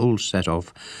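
ordinary delivery, nothing marked

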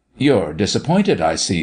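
ordinary talk

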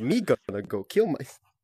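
slow, drawn-out character voice. Joking with friends on voice chat: Jar Jar Binks voice. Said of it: "like Jar Jar Binks".

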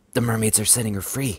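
hushed, secretive stage whisper under the breath. Narrator reads himself watching mermaids free a captive mermaid: half-whispered. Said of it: "I whispered".

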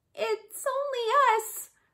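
very high-pitched, small, little squeak. A narrator voices the bush rat answering the lion below: squeaking as Bush Rat. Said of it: "squeaked the bush rat".

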